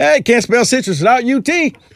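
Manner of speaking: high, flat, matter-of-fact Southern twang. Retelling a coach's famous jab at a rival: Steve Spurrier's matter-of-fact Southern twang. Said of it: "so matter-of-factly in that little Southern twang he had".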